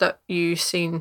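plain reading voice

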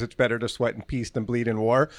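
ordinary talk

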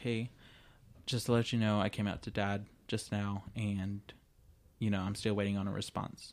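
ordinary talk

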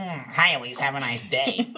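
deep, slow delivery. Speaker shows how a typed online comment would sound, in an internet comment voice. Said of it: "That's how I'm gonna say it".

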